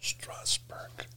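soft, unvoiced whisper.

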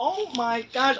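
acted, high-pitched, frantic, freaked-out yell. Retelling chasing dogs across a golf course, retelling screaming at the sky. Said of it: "I'm literally screaming at the sky".

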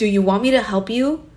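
super stern, strict, firm, no-nonsense tone. Retelling how she snapped the panicking speaker out of it, imitating a super stern tone. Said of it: "she got super stern and was like".

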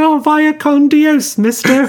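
tiny, waifish, very high voice. The speaker imagines a line the movie was missing, in little Jim's tiny, waifish voice. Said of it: "in his tiny, waifish voice".

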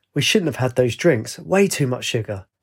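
ordinary delivery, nothing marked

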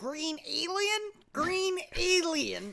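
very high, slow cartoon character voice. Using an animated voice after getting the voiceover reel: animated cartoon voice. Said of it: "I was working on my animated voices".

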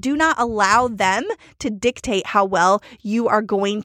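ordinary delivery

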